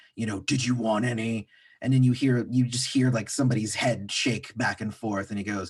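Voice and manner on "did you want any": put-on deep guttural man's voice. Retelling an overheard man asking a question, in a deep guttural man's voice. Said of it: "this man with like a very deep guttural voice".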